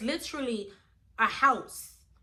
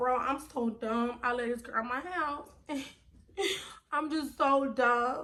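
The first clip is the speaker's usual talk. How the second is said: re-enacted, put-on crying. Retelling searching for her keys, imitating her own crying. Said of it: "I'm crying like".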